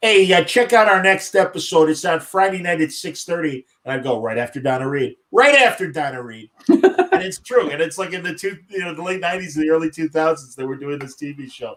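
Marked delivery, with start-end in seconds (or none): 0.0-6.5 put-on Chicago accent. Imitate your buddy, the sports talk show host, announcing the next episode in Mike North's great Chicago accent. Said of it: "He had a great Chicago accent".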